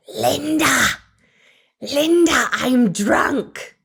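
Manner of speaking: fake full-voiced attempted whisper. Retelling a stumbling woman grabbing her friend's shirt: full-voiced would-be whisper. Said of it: "full voice, though I'm sure she thought she was whispering".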